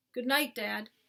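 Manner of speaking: ordinary delivery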